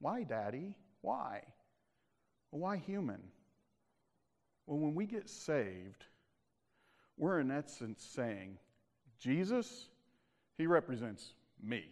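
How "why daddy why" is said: put-on little kid voice, quieter and slower. Teaching about Jesus, noticing you keep asking why: little kid voice. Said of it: "I sound like a little kid".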